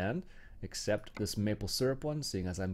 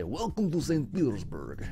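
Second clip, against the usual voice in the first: put-on Russian accent, high, swooping; 6 semitones higher, 4 dB louder than usual. Welcoming people to saint petersburg, put-on russian accent. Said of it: "That's my best best Russian accent".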